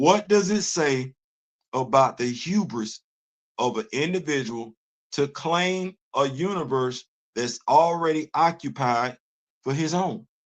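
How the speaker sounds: measured, slow, deliberate, word-by-word delivery. Speaker repeats a question so listeners see the reference, saying it slowly. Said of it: "I'm gonna say it slow".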